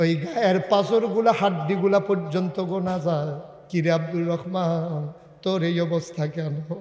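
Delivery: grieving, sorrowful cry.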